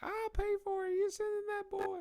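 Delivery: mocking, very high-pitched squealing voice.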